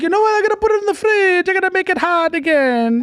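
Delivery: put-on Italian accent, high, with a lilting tune. Acting out the other speaker's mother, in a strange Italian-sounding put-on accent. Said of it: "I don't know what that accent was".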